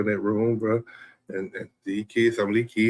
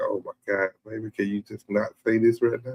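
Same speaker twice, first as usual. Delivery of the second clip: put-on whispering voice. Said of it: "you gotta whisper to them".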